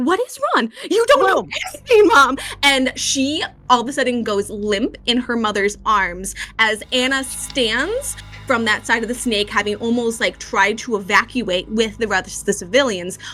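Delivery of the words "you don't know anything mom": shrill, very high, furious screaming outburst.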